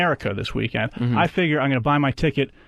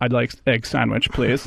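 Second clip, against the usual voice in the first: put-on German accent; 3 semitones lower than usual. Retelling what a customer ahead in line said: imitating a stereotypical German accent. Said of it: "he actually sounded like that".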